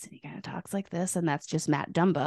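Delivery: very quiet, soft, breathy near-whisper. Show everyone how the player normally talks, in a very quiet Matt Dumba voice. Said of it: "has a very quiet kind of voice".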